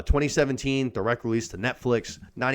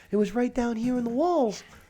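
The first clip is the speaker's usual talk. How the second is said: put-on little girl voice, higher pitch; 13 semitones higher than usual. Retelling a movie scene, imitating the little girl's voice. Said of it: "the tone of her voice".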